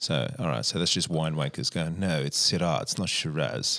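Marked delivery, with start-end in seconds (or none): 2.0-3.8 English-sounding accent. Mimicking winemakers insisting on their grape's name, in an English-sounding accent. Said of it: "That's a very good English accent".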